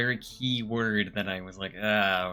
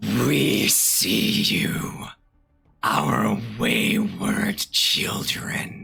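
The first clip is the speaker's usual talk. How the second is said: loud, rough, creaky, rasping put-on voice; 6 dB louder than usual. Voicing Abyss speaking through its mouth: Abyss voice. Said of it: "I have to do it in, like, Abyss voice".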